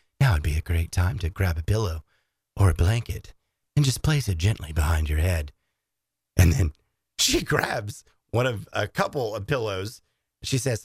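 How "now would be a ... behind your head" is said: very low, calm, soothing guide voice. Retelling what a woman said the whole time, imitating a soft soothing voice. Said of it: "Soothing voice".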